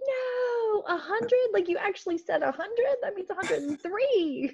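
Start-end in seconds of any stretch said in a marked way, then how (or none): 0.1-2.7 mock yelling, much higher pitch. Telling others on a call about the heat forecast, retelling yelling at the TV. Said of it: "I was like yelling at the TV".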